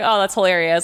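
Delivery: ordinary delivery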